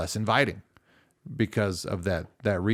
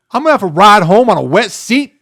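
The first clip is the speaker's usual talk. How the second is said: much higher, loud, selfish tone. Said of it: "the second thought".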